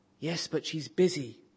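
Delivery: put-on small child whispering. Reading a joke where four-year-old Jimmy answers a telemarketer, in a small child's whisper. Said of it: "Still whispering".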